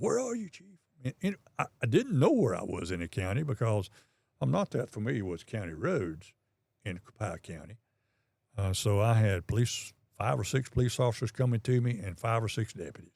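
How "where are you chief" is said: put-on shrill, urgent, very high screamed call. Police chief retells officers screaming for him on the radio: retelling someone screaming. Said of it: "on the radio screaming".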